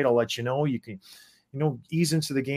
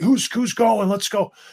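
acted screaming, higher; 8 semitones higher, 6 dB louder than usual. A hockey player recalls challenging everyone during the national anthem, retelling his own screaming. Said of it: "I'm screaming".

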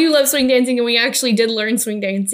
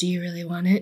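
fake seductive voice, lower and quieter; 4 semitones lower, 8 dB quieter than usual. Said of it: "Do your sexy voice".

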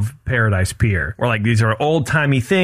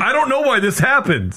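mocking confused voice, higher pitch; 10 semitones higher than usual. Retelling an earlier recording mishap: imitating confused idiots. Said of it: "a conversation between two idiots going".

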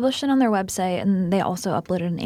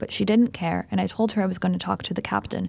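plain

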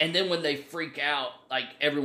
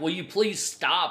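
imitated pleading, higher and louder; 4 semitones higher, 4 dB louder than usual. Retelling a video where a parent begs a photographer: imitating someone pleading. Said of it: "pleading with him".

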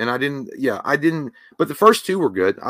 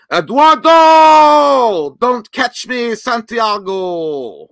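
very high, very loud, stretched-out ring-announcer call; 10 semitones higher, 8 dB louder than usual. Calling out someone's name as before a boxing fight, Michael Buffer impression. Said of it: "I want to do like a really shitty impression of Michael Buffer and say your name. Like you're getting ready to fight Canelo Alvarez".

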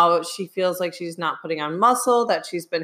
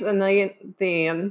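odd, unusual accent. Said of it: "that was a weird accent".

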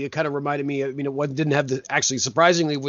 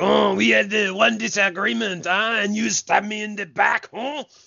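over-the-top fake cartoon French accent, pitched up; 6 semitones higher than usual. Retelling what a guy said about a leaked story, in a cartoonish French accent. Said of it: "Were you doing a cartoonish French accent?".

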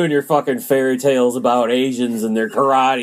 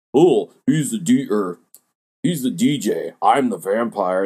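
mimicking goofy silly voices, lower; 3 semitones lower than usual. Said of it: "two goofy voices in the background".

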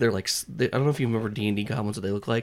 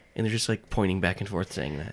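usual speaking voice

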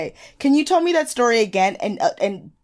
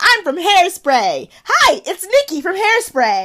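very high, loud, slow, drawn-out announcer-style calling; 10 semitones higher, 5 dB louder than usual. Retelling a friend's airport story, imitating Nikki Blonsky. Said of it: "Nikki Blonsky, of course, was like".

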